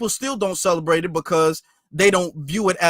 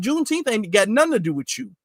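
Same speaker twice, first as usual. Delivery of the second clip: ordinary talk, nothing marked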